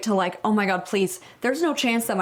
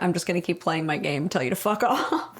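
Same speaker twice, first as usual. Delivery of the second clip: put-on unbothered sixteen-year-old voice, lower pitch; 3 semitones lower than usual. Imitating a sixteen-year-old who keeps playing his game: imitating an unbothered teen. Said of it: "how unbothered this sixteen-year-old is".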